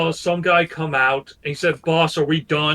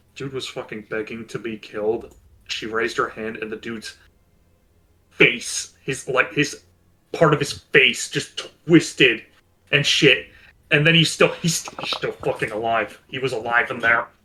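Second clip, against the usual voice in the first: quiet, hushed, secretive whisper; 5 semitones lower than usual. Telling the others in character what happened in the basement: whispering. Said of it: "he's gonna go a bit more of a whisper".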